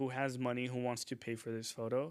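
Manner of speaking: ordinary talk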